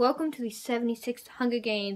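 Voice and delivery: ordinary talk, nothing marked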